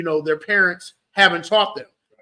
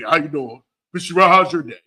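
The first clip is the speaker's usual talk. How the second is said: deepened, put-on grown-up voice; 3 semitones lower than usual. Imitating a two-year-old greeting the speaker like her father; imitating toddler's deepened voice. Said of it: "She tries to deepen her voice".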